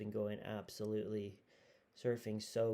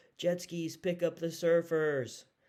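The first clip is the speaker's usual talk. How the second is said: loud, drawn-out announcer yell; 7 semitones higher, 8 dB louder than usual. Retelling what the announcer said during the heat: imitating an announcer yelling. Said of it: "the announcer just yells".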